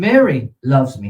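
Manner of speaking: "Mary" stressed, slow and loud. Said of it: "Same words, completely different nuance".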